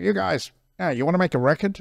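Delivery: put-on casual American accent. Retelling what a man said to the band backstage, in his american accent. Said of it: "in his American accent".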